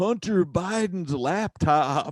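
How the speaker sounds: put-on sudden, high yell. Retelling how a stranger yelled out of nowhere: imitating someone yelling. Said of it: "he just yelled out".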